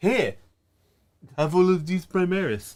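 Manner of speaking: camp vampire voice. Recapping a story to friends, the speaker quotes Dante: weird accent for Dante. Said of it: "That's a weird accent for Dante".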